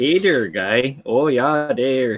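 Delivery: Wisconsin Upper Midwest accent. Showing friends how people talk in Wisconsin, Wisconsin Midwest accent. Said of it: "That's fucking Wisconsin".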